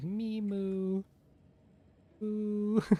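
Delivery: put-on excited cat voice. Imitating the cat Pop-Tart when she's really excited: mocking Pop-Tart's excited meow. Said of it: "She knows I'm mocking her".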